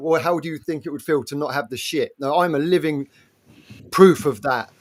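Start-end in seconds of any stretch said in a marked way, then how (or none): none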